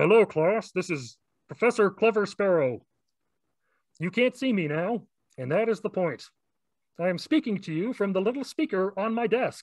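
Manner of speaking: put-on frog puppet voice. Voicing a professor speaking to the class from a desk speaker: Kermit the Frog voice. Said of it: "why does he sound like Kermit the Frog?".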